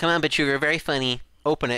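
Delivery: plain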